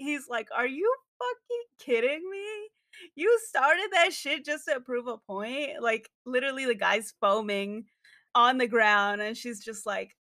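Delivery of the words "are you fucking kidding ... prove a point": mock livid, disbelieving, high, furious voice. Retelling a book scene where a character is pissed: imitating an angry character. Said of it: "he's fucking pissed".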